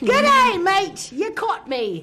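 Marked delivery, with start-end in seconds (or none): 0.0-1.1 put-on Australian accent. Asking about working on an accent, then showing it: Australian accent. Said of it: "working on a really good Australian accent".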